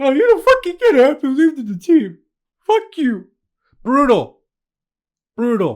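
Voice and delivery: high, loud, choked-up mock sobbing outburst.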